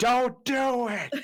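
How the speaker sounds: high, slow, loud screaming.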